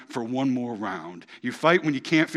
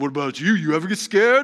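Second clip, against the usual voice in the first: loud, rough, pushed, bad Italian accent; 4 semitones higher, 6 dB louder than usual. Retelling a scene where Rocky answers his son: attempted Rocky Italian accent. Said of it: "I can't do Italian accents. I'm trying".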